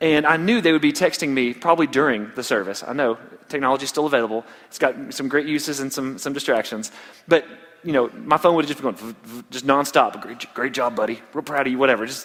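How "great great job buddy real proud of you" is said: mock sarcastic praise, lower. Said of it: "Sarcasm is a part of life".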